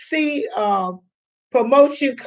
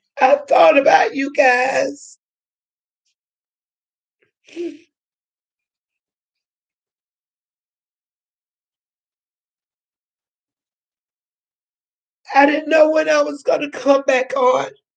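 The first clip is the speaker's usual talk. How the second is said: choked up, close to tears, voice breaking. Thanking viewers in the comments by name: choked up, close to tears. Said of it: "y'all gonna make me cry this morning".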